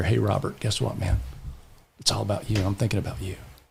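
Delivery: hushed whispered words. Retelling a whisper into someone's ear during a group exercise: retelling a whisper. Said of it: "I just whispered in her ear".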